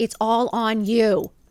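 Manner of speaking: very slow, drawn-out, hysterical screaming. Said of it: "Literally just screaming into a phone".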